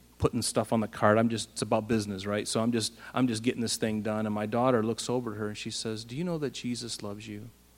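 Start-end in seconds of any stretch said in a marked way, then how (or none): 6.1-7.5 soft, kind, gentle and sweet. Retelling the daughter's words to a woman, imitating her sweet little-girl voice. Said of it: "she said it just kind and sweet like that in her little girl voice".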